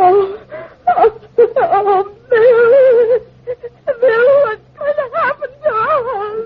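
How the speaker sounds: tearful, sobbing wail, very high, "us" stretched. Asking what will happen to them, crying. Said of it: "don't cry".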